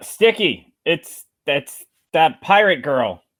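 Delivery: half-shouted. Warning a companion in a loud crowd about a pirate girl: yelling. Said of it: "You're yelling".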